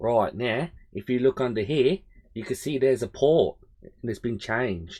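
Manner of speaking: clumsy, bad put-on Australian accent. Inspecting a board under a microscope, the speaker narrates in a poor australian accent. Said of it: "That was my poor attempt of uh, an Australian accent".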